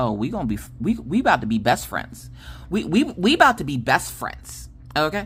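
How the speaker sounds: ordinary delivery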